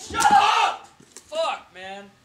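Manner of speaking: very high, very slow, drawn-out, worked-up enraged shout. Neighbor complaining about a dog barking for days, worked-up outburst. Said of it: "Just fucking chill out. Relax".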